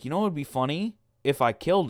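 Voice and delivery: plain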